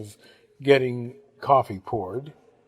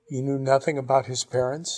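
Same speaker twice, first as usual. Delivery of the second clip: ordinary delivery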